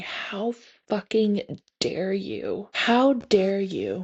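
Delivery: acted slow, tearful, angry crying scream. Retelling falling to the knees in anger, reenacting a crying scream. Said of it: "crying and screaming".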